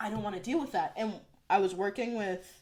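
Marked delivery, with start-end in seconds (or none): none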